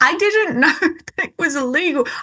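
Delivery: talking through little giggles. In a conversation, giggling at the absurdity while speaking. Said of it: "I'm sorry, I'm giggling".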